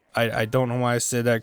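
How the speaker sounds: ordinary delivery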